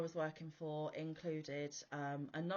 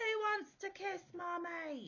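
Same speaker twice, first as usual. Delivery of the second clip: put-on very high, stretched-out, drawn-out holler; 14 semitones higher than usual. Retelling a colleague opening the bar door at a party: imitating someone yelling. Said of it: "yelled at the top of their voice".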